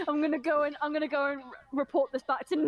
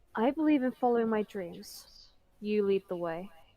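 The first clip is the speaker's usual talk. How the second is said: close whispering, lower pitch; 5 semitones lower than usual. Speaking in character into another character's ear: whispering in someone's ear. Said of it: "this is what I'm gonna whisper in your ear".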